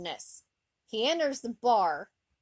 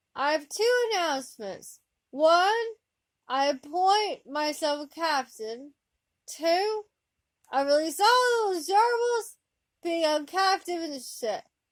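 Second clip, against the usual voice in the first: sloppy, slurred, pitched-up speech; 7 semitones higher than usual. Reading a story aloud, the counselor announcing over the ship's comm: slurred voice. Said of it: "the slurred voice of Counselor Deanna Troi".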